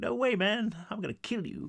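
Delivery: bad fake American accent. Retelling a story, voicing one character's reply in a terrible American accent. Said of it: "that was a terrible American accent".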